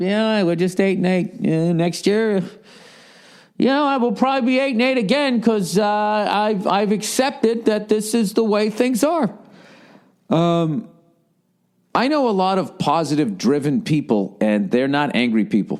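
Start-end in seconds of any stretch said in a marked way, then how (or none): 0.0-9.3 high, resigned coach voice. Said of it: "it'd be like".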